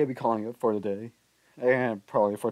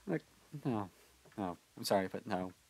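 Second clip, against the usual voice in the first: ordinary delivery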